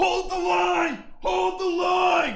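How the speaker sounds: very loud, high, drawn-out scream. Retelling a game battle in voice comms: imitating a scream. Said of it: "we were just screaming in comms".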